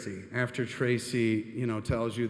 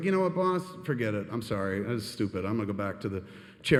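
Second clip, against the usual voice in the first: normal talking voice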